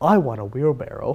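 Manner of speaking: soft, strangely proper voice. Telling how Bronar straightens up and speaks: Bronar's weirdest voice. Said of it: "weirdest voice goes".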